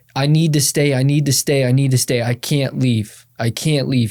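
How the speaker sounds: mock desperate pleading tone. Retelling a phone call from rehab, imitating someone pleading. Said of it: "he was on the phone pleading".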